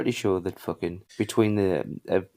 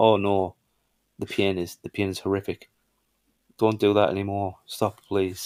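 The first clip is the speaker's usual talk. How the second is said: ordinary talk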